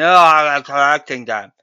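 put-on loud, low slur, words run together. Acting out a man with ten beer bottles answering the bartender, imitating someone all slurred. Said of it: "And he says all slurred".

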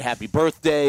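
ordinary talk, nothing marked

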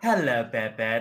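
put-on half-British character voice. Showing the others how she says hello to Bebe, in a half-British Moira Rose voice. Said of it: "That's how she says it".

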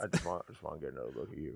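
very deep, rough, hushed rumble dropped way down. Imitate the man whose voice you find distracting, in a Sam Elliott impression. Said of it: "his voice".

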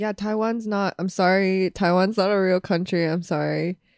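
apologetic, contrite delivery. Retelling an on-camera apology about Taiwan: imitating John Cena apologizing. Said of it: "apologizing 'cause he accidentally said Taiwan".

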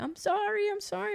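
tearful, crying, very high voice. Retelling a late-night call from a woman in tears, imitating someone crying. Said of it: "And she's crying".

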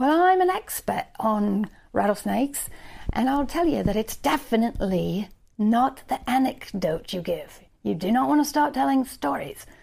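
put-on Australian accent with an expert, lecturing tone. Imagining a snake expert from Australia giving his verdict, in an Australian accent. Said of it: "Is this even an Australian accent?".

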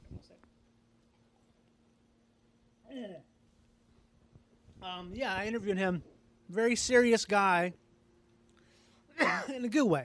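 voice strained from choking. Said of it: "I'm choking right now".

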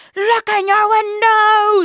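very high, shrill, loud scream. Speaker retelling a cyclist yelling at her while she drove, imitating a man screaming. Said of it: "he was screaming at me".

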